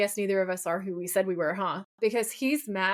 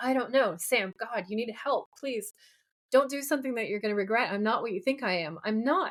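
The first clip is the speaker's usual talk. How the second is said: put-on shaking, crying, tearful voice; 2 semitones higher than usual. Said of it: "she's shaking and crying".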